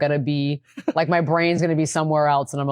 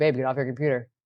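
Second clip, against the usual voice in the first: flat, level, unvaried monotone delivery; 3 dB quieter than usual. Describing how she tells her partner to get off the computer: monotone. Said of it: "you said it very monotone there".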